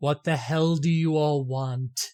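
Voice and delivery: words rumbled out in a rolling voice. Narrating a man opening a thick bulletproof glass door to the group, soft rumbling voice. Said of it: "he says in this soft, rumbling voice".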